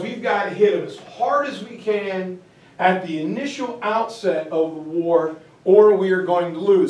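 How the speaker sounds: plain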